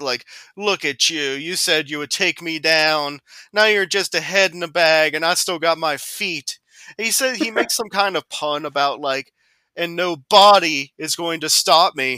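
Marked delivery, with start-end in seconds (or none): 0.0-6.6 put-on mocking, taunting voice. Retelling a scene, the speaker quotes a character taunting Dr. Hill's head, imitating a mocking taunt. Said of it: "he starts, like, mocking it".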